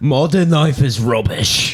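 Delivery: put-on British accent. Asked to say an album title in a British accent: British accent. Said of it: "Could you say it in a British accent?".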